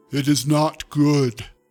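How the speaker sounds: put-on loud, slow giant monster voice. Reading a story, voicing the creature Calzilla: King Kong meets Andre the Giant voice. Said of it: "in its King Kong meets Andre the Giant voice".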